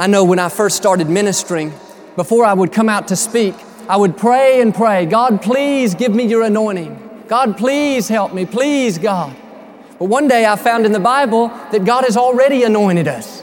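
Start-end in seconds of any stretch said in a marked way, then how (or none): 5.1-9.4 acted, mock-begging, pleading tone, slower. A minister retells how he prayed before speaking, retelling begging prayer. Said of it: "You don't have to beg God for that".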